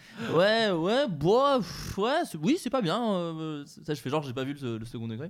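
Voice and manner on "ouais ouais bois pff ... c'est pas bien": sheepish, forced, pitched-up fake laugh-talk. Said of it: "avec le faux rire, euh, le, le rire jaune".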